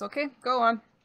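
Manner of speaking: high, laughing delivery, chuckling through words. Voicing a guard waving the players on: laughing while talking. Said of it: "And he laughs and he just says".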